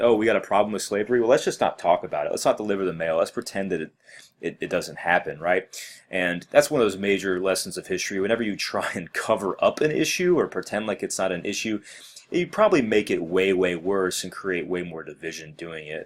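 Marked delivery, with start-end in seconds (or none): none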